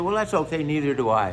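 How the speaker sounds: usual speaking voice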